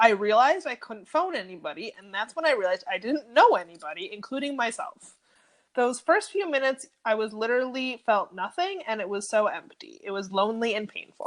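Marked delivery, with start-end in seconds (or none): none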